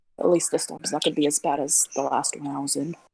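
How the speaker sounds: low, quiet mumble under the breath. In a role-play scene, a player has their character Brooke mumble under her breath. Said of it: "Brooke's gonna mumble under her breath".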